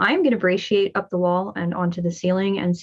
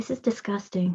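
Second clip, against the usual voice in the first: quiet, dry, flat deadpan; 7 dB quieter than usual. A voice from the ceiling comments on the dust: quiet deadpan. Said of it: "You hear quietly, deadpan from the ceiling".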